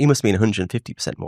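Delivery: ordinary delivery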